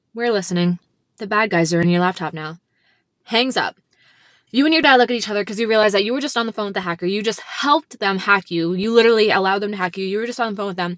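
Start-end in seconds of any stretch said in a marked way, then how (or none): 0.2-2.6 voice sinking low into creepy, spooky menace. Retelling what a phone caller said when his voice dropped: imitating a spooky dropped voice. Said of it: "His voice drops. Gets spooky as f-".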